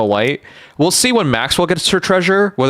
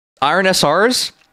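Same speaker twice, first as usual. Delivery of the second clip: deliberate put-on Canadian accent, pitched up; 5 semitones higher than usual. Explaining an update, the speaker slips into a canadian accent again. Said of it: "should I just Canadian accent that again?".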